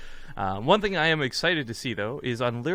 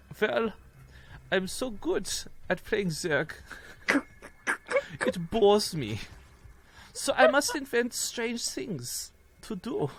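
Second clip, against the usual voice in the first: exaggerated, bad, fake German accent, high and slow; 8 semitones higher than usual. Acting out an imagined quote in a bad german accent. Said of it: "I'm gonna try and do a bad German accent for this".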